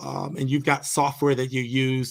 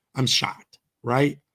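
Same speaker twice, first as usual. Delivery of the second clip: normal talking voice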